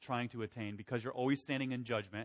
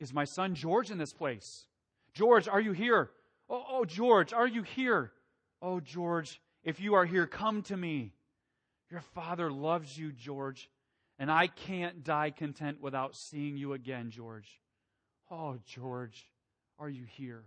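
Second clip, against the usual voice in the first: put-on aged, trembling, quivering old man's voice calling out; 4 semitones higher, 4 dB louder than usual. Retelling an aged father calling for his son at congregations, imitating his quivering voice. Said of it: "in a quivering voice he would say".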